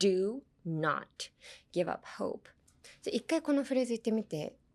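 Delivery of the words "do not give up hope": pause after "do", before "not". Advice on emphasizing do not in a phrase: pause between do and not. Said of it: "if you want to emphasize do not, put a pause in between it".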